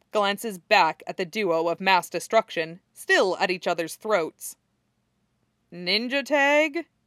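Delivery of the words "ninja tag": deadpan, wry, dry tone, slightly pitched up. A man glances back at two fighters at each other's throats, asking dryly. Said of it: "he asks dryly".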